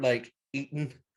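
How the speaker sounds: normal talking voice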